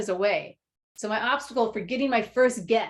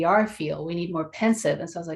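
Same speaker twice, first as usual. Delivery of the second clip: usual speaking voice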